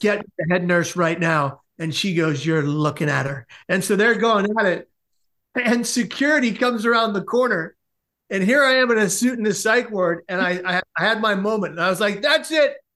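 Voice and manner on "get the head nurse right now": plain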